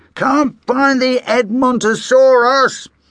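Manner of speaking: muffled, very high-pitched voice. Dad calls out with his head stuck in a crate: muffled voice. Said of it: "came his muffled voice".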